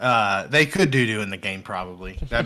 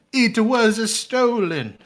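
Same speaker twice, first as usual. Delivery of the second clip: put-on high, loud Irish accent; 12 semitones higher, 5 dB louder than usual. Guessing whether a man in London is Irish: imitating how he sounded. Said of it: "That's how he sounded".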